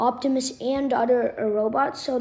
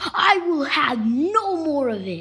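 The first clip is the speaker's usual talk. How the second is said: slow, furious, very angry delivery; 3 semitones higher, 3 dB louder than usual. Retelling a comic panel where a character rips his hand off: imitating a super angry line. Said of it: "super angry".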